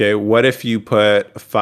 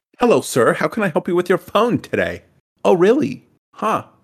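put-on polite customer-service voice.

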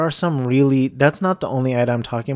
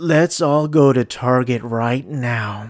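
mock terrible gasping ad-read voice. Imitating a badly read Target ad heard on a show: imitating a terrible gasping ad read. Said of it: "It sounds like this".

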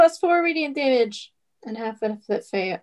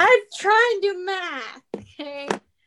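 high, pushed, strained yell; 8 semitones higher than usual. Doing math while another player keeps saying go, go: yelling. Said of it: "Stop yelling at me".

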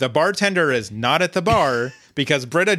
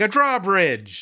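high, screaming call; 5 semitones higher than usual. Telling a bar story, speaker acts out Elroy running after people, imitating Elroy screaming. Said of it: "screaming after them".

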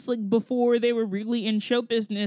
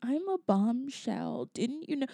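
put-on airy voice, much quieter; 8 dB quieter than usual. Describing how she speaks when playing Marilyn: airy Marilyn voice. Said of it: "the airy voice thing is real".

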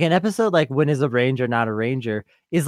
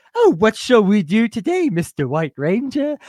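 pitched-up stock butler AI voice; 8 semitones higher than usual. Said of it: "It's the dagger's just like".

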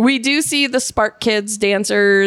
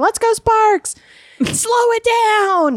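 put-on very high, drawn-out shrieking cheer; 13 semitones higher than usual. Speaker retells what the woman seated beside them kept screaming: screaming. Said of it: "she was like screaming like".

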